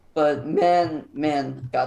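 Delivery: cracking, breaking voice on the words. Praising a player's game six performance, voice cracking. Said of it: "I voice cracked there".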